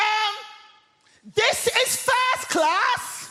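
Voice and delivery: very high, slow, drawn-out full-voice shout. Retelling a woman in a first class carriage shouting on seeing the speaker's group: retelling a shout at top of voice. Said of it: "at the top of her voice, she shouts".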